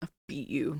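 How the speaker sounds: very quiet, hushed, menacing voice. Voicing a character who glares at Kelsey while speaking: glaring threat. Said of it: "She shoots Kelsey a look, like, a glare".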